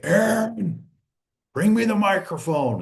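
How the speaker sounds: rough, gruff blue-collar voice, pitched slightly high. Retelling a call from the back of the room: imitating a gruff voice. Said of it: "I hear this gruff voice from the back say".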